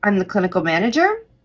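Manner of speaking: upspeak lift at the end of manager. Showing a voicemail greeting that sounds like asking: rising at the end like a question. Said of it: "It sounds like I'm asking a question".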